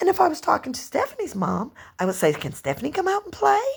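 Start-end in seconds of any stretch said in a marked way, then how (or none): 2.3-3.6 high, proper, put-on girly voice.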